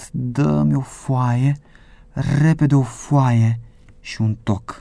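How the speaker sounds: clenched, tense, slow, groaning voice. Jim, learning the governor himself brought the pardon, asks for paper with a tense groan. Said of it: "Jim gemu crispat".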